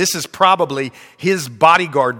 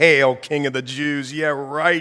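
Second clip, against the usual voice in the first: put-on mocking, jeering tone; 4 dB quieter than usual. Retelling a story, speaker acts out those who mocked him, a mocking taunt. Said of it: "they bow the knee and they mock him".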